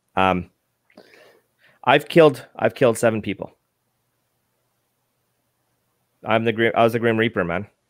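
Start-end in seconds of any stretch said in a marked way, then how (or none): 1.8-7.6 holding back emotion, fighting back tears. Sharing something posted on Instagram, holding back emotion. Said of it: "I'm trying not to get emotional here".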